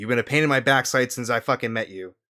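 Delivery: very loud, high-pitched, angry shout. Voicing an attacker yelling at a former apprentice during a firefight: yelling in character. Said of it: "he's yelling".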